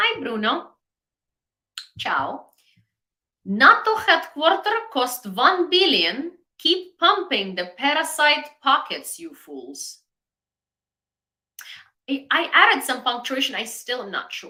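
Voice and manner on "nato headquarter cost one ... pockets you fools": mock Russian-sounding character voice. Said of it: "Let me put on the best voice for Ivan".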